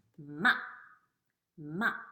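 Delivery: quick, short fourth-tone fall on ma. Teaching the fourth tone of 'ma', short falling tone. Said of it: "It's a short down sound".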